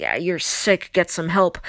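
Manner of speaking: put-on hostile, indignant tone, swooping upward. Retelling what the speaker used to say: imitating own indignant hostile tone. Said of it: "indignant sort of hostile tone".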